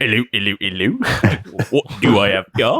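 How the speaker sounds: put-on posh, elderly policeman voice. Prompted by a co-performer's suggestion, the speaker does a fancy old cop voice. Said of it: "Look at an old fancy cop".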